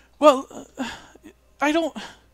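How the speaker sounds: very high, stumbling, halting stutter. Retelling a woman answering where they were last seen, imitating her stuttering. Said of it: "she's kind of like stuttering over her words".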